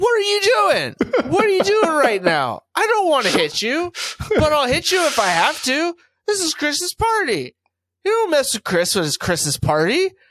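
mock drunken voice, pitched way up. Retelling a drunk friend's warning at a party: imitating a drunk friend. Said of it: "He was so drunk".

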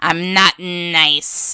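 cartoon villain voice with nice stretched out. Speaker gives their usual reply to people calling them nice: Skeletor voice. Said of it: "in my Skeletor voice".

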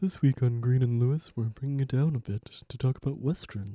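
put-on kids' TV dinosaur character voice. Opening the show in a toned-down voice: Barney the dinosaur voice. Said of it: "are you Barney the dinosaur now?".

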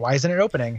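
ordinary delivery

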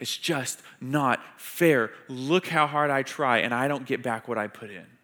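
bitter, aggrieved, angry, self-pitying victim voice. A speaker illustrates how people sound when life feels unfair: angry victim voice. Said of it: "that anger come out in that victim voice".

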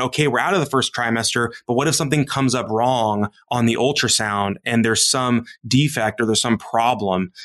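ordinary delivery

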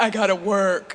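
dopey, dim-witted husband voice. Retelling how a woman mocked her husband who only works: mocking dumb husband voice. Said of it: "she did the dumb husband voice".

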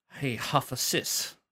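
acted propositioning tone. Painting a picture of the prince's sexual advances: acting out the prince's advances. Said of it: "and you go".

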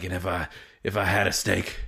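put-on Irish-sounding accent. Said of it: "accent, Irish or something".

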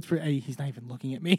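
hushed half-whisper under the breath. Retelling what someone said during an awkward silence: imitating a half-whisper. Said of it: "Tamara just whispers".

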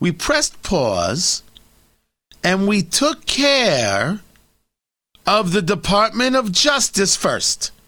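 hard-edged New York vowels, word care drawn out. Speaker voices Andrew Cuomo's side of the argument: Andrew Cuomo, hard-edged New York accent. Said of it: "some hard-edged New York accent".

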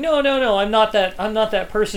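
ordinary delivery

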